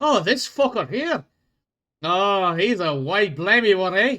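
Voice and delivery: put-on loud Scottish accent slipping into Irish. A player speaking in character, attempting a Scottish accent drifting Irish. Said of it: "That's probably more Irie than it is fucking Scott".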